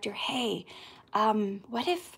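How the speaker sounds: very slow, hushed whisper. Retelling suggesting an idea to the director: imitating own whisper. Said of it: "to whisper to the director".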